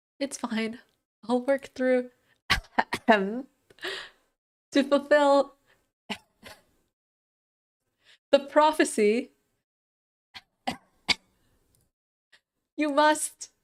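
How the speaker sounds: coughing and choking while talking. Voicing a ghost giving an important message, coughing with spice in throat. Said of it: "I think I've still got some spice stuck in my throat".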